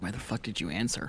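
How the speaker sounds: quiet, half-voiced, under-the-breath muttered aside. Retelling a remark mouthed to oneself after turning the head: retelling muttering to oneself. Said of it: "not whisper, but, like, mouth to myself".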